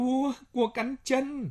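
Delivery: sudden, abrupt, very high cry. Lan, walking silently with a rifle, suddenly calls out: sudden cry. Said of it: "chợt kêu lên".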